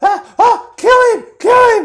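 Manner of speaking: very high, very loud, shrill goblin cry. Voicing a goblin who points and shouts at the player: goblin shouting. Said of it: "as it shouts out".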